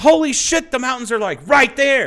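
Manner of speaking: mock very high, loud, excited, freaking-out outburst. Retelling a visitor's first sight of the mountains: imitating someone flipping out excitedly. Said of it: "she flipped out, she spilled some coffee".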